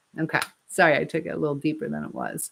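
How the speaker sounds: ordinary talk, nothing marked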